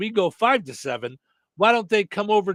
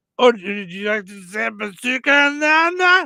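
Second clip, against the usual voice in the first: mock-drunk voice, higher, louder, slower; 2 semitones higher, 5 dB louder than usual. Retelling jumping into a conversation to tease someone, put-on drunk voice. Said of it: "you know me with my drunk voice".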